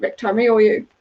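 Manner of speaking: normal talking voice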